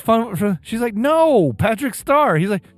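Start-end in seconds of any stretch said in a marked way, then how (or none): 0.9-2.4 put-on irritated woman's voice. Retelling a video where a wife repeats herself: imitating an irritated woman. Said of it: "She was getting irritated".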